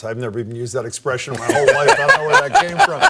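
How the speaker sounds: high, loud, amused talk with laughter.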